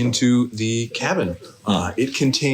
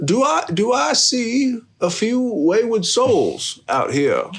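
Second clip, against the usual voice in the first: put-on kindly old man voice, higher pitch; 11 semitones higher than usual. Voicing a kindly smiling grandfather who greets players in his garden: kindly grandfather voice. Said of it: "he says".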